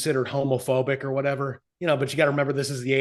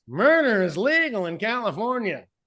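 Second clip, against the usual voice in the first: comedic, pitched-up, sing-song news anchor swooping delivery; 8 semitones higher than usual. Retelling how they quoted a joke to the comedian in Norm Macdonald voice. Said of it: "we did that to him in his voice".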